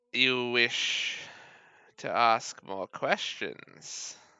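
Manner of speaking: put-on stock elderly lady voice. Voicing a cauldron-stirring woman answering a player: generic old lady voice. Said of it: "it's just generic old lady voice".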